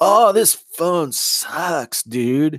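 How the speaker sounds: put-on laid-back stoner voice. Riffing mid-conversation, doing a Jeff Spicoli impression. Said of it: "I was doing more of a Jeff Spicoli".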